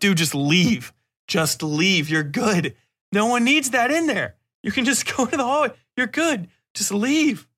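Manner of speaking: acted yelling, pitch rising. Describing watching a show, retelling yelling at the screen at a character. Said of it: "And I'm yelling at the screen".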